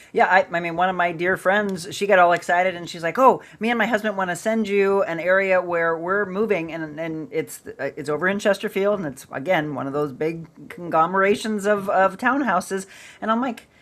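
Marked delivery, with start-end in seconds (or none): none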